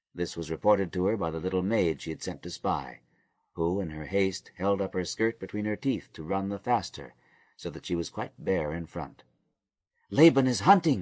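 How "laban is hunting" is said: stage whisper, loud. A little maid sent to spy reports back to her mistress in a loud whisper. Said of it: "she announced in a loud whisper".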